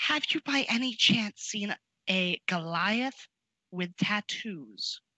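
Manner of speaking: confidential, conspiratorial, secretive voice. A character asking someone at the inn about a goliath, in a lowered hushed voice. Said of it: "I'm gonna hush hush and like lower my voice".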